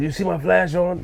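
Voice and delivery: high, put-on aggressive shouting. Retelling an argument with someone who was recording: imitating someone yelling. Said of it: "And he yelled".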